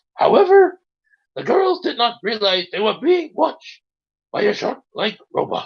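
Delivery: ordinary delivery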